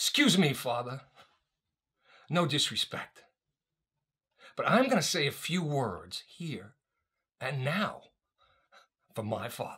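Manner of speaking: confident, self-assured, angry and determined declaration-style delivery. Retelling speaking up to the priest at the graveside: retelling an angry, determined speech. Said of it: "angry, determined, confident, self-assured".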